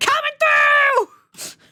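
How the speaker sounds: put-on yell. Repeating the character's entrance line from the game: imitating a yell. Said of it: "just yelling".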